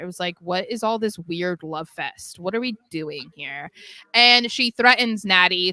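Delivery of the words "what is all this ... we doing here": play-acted, mocking, jeering, ridiculing taunt. Retelling a wrestling segment, imitating Chelsea Green mocking the others. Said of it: "Chelsea just immediately mocks them".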